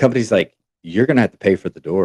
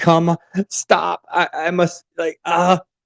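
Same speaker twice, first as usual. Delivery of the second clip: high, drawn-out, tearful bawling sobs; 8 semitones higher than usual. Retelling a woman banging on train windows: imitating someone bawling. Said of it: "She's emotional. She's bawling her eyes out".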